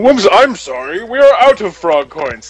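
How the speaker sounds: silly, clowning, goofy put-on voice. Retelling what Josh said about the frog coins: imitating Josh's goofy voice. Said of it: "he puts on this goofy voice".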